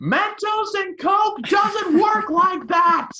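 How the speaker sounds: high-pitched, loud, slow yelled outburst. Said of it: "I literally yelled at the screen".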